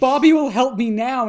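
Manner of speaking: desperate, loud yelling, acted out. Recapping an episode, the host acts out a character running toward the camera, imitating a yell.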